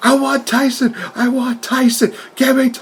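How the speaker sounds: put-on, shrill, high-pitched, demanding screamed yell. Telling of a locker room brawl, the speaker acts out Jericho: imitating Jericho yelling. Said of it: "Jericho is just yelling like".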